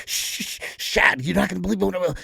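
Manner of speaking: excited stammer, words tripping over, loud and rough. Retelling how a man impersonated Mad Dog coming up to him, imitating Mad Dog's excited stutter. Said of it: "Mad Dog would get so excited, he would stutter".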